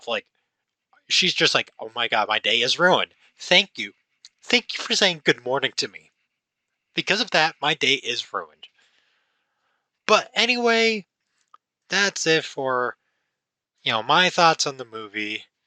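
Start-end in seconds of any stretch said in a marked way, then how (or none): 1.8-8.7 thoroughly annoyed, pissed-off, put-out tone. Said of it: "so pissed off".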